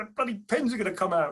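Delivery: loud screaming, yelling at full volume. Retelling how an officer reacted to a child pulling the ejection handle: imitating someone screaming. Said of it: "he was screaming at everybody".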